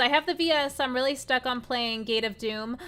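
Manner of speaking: ordinary talk, nothing marked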